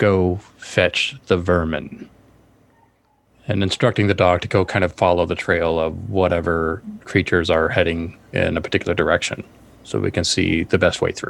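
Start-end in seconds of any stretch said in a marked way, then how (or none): 0.0-2.1 slow, hushed stage whisper. Narrating a game scene, a character stoops down and instructs the terrier, half-whispering. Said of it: "and whispers to the dog".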